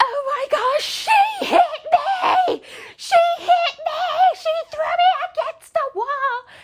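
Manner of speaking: put-on very high, frantic, drawn-out hysterics. Retelling what she said when she came in, mock-hysterical. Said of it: "she's like hysterical".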